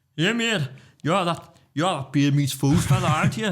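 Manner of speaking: imitated high-pitched Geordie accent. Retelling what a man at the urinals said to him, imitating a Geordie accent. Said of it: "He was a Geordie".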